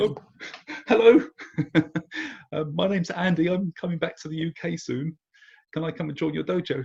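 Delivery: high-pitched, nervous, laughing delivery.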